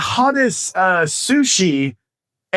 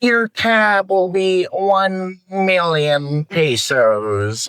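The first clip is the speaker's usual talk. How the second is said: slow, drawn-out supervillain delivery. Retelling a man announcing the bar tab, in a Doctor Evil voice. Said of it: "Why do I sound like f- fucking Doctor Evil".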